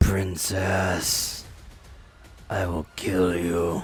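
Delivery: low-pitched undead soldier voice. Voicing the undying soldier as he comes up to attack: undying soldier voice. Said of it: "And he goes".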